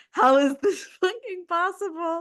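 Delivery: talking through laughter. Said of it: "I know I'm laughing".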